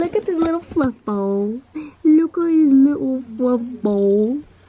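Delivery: put-on high, slow, loud cooing baby talk.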